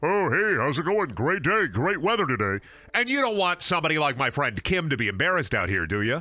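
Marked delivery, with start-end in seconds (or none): 0.0-2.6 silly goofy voice. Joking about making a belly talk: silly talking-tummy voice. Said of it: "make it talk. Like".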